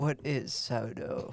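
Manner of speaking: attempted put-on British accent. Asking a question after being pressed to do a british accent: put-on british accent. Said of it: "Ask again".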